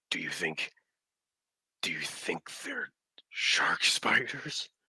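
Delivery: hushed whisper. A game master voices a mage character speaking to the party, whispering. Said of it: "and he whispers".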